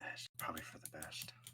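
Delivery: half-whispered, hushed mutter under the breath. A game master voices a woman watching a player sit down, muttered under breath. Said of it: "she mutters under her breath".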